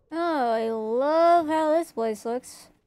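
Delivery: mocking, insincere, sarcastic admiring tone. A game streamer comments on the look of the area, sarcastic. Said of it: "It's sarcasm".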